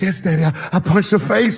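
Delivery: put-on high, tearful, crying small little-boy voice. Retelling a crying son admitting he punched a girl: imitating son crying. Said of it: "he was crying".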